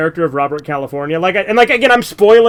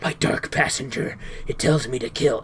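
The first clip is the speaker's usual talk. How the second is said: hushed, barely voiced, very quiet breathy whisper; 4 semitones lower, 11 dB quieter than usual. Imitating how a show's serial killer whispers: whispering Dexter impression. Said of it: "all he does is whisper".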